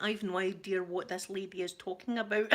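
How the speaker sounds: ordinary delivery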